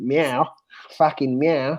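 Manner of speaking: put-on taunting, meowing delivery in New Zealand accent. Imagining a player saying meow to an opponent: Chris Wood New Zealand accent. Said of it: "his New Zealander accent".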